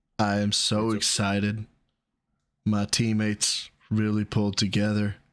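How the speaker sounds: put-on flat, emotionless deadpan monotone. Acting out a post-game interview answer, mock flat and emotionless. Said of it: "the emotional range that is just pure equality".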